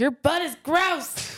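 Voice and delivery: mock, high, stretched-out yell. Retelling what he yelled at an ex outside a bar: retelling a yell. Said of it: "he just yells".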